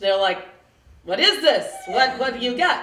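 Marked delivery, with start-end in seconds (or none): 1.0-2.8 put-on New York accent. Retelling a bra shop saleswoman questioning her bra: put-on New York accent. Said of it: "but I can do a New York accent".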